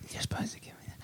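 whispering. Retelling what an actor seemed to whisper to another actor on screen: whispering. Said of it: "You could almost hear him whispering like".

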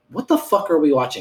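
mad exclamation. Retelling a friend's reaction to watching Slugs, imitating someone mad. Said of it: "he was so mad".

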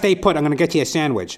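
high, loud, barking hardboiled noir detective voice. Retelling a story, the speaker quotes Mike Hammer answering a hungry woman, in a Mike Hammer voice. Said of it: "He goes".

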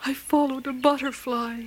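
apologetic. Narrator reads Twinkle answering Mother Fox's question, very sorry. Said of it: "sounding very sorry".

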